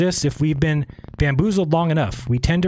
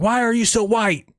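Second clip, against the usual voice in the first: high-pitched yelling; 7 semitones higher than usual. Acting out a pointless daily rant at a wall: mock yelling at a wall. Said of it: "just yelling at the wall".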